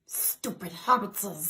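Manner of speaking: creature voice, with extra -ses added to hobbits. Doing an impressions challenge on request: Gollum voice.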